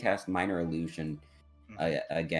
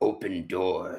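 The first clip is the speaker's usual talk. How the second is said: put-on big orc voice; 2 semitones higher, 4 dB louder than usual. In the game, the player speaks as their orc Grog: big orc voice. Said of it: "Just big orc voice".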